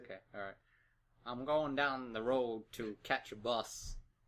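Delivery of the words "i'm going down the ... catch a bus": bad put-on American accent, spoken very slowly. Showing off a horrible American accent with a sample sentence: bad American accent. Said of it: "my horrible American accent".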